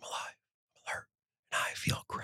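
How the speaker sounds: mimicked mumbling under breath. Retelling someone reading a sign: imitating someone muttering under breath. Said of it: "Under her breath".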